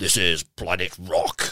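very slow radio announcer voice, every word stretched. Showing what the Planet Rock radio voiceover guy sounds like, Planet Rock voiceover impression. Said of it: "you can probably guess what the voiceover guy sounds like".

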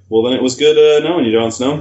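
ordinary talk, nothing marked

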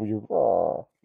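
put-on villain voice. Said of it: "would you do that voice".

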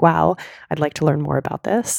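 plain

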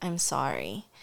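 close, gentle, soft and hushed half-whisper. Retelling a hug at bedtime with a son: imitating own half-whisper. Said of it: "I whisper, I whisper to him, like".

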